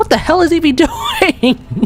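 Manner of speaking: high, slow laughing disbelief.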